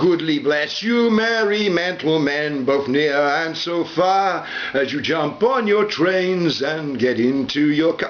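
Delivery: silly put-on stupid voice, high and slow. Opening the video with a rhyming greeting, then apologizing: stupid voice. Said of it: "I'll try not to do the stupid voice".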